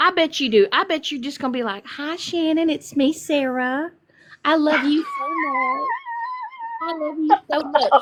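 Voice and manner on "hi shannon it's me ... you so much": syrupy sweet, high, swooping, slow, drawn-out voice. Imagining how Sarah would sound talking to her: sweet Mary Poppins voice. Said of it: "I bet you sound like a Mary Poppins".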